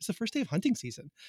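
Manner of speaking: condescending tone. Recounting a girl in the front row answering, mimicking a condescending teen girl tone. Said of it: "said it with like a tone that like only a 17-year-old girl could have".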